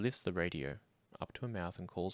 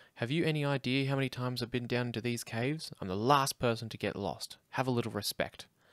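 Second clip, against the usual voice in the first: sharp, snappish, loud and pitched up; 5 semitones higher, 7 dB louder than usual. Narrating a story, the woman answers companions questioning her route, snapping.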